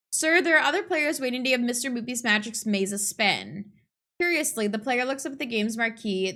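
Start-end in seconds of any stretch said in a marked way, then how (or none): none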